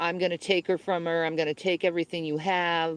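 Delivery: imitated taunting, mocking voice. Retelling how someone taunted a husband on calls: imitating someone mocking. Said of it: "he used to mock my husband".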